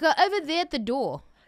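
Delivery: put-on South African accent. A speaker born in South Africa shows how they talk, in a South African accent. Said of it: "They talk like that... I'm allowed to do the accent".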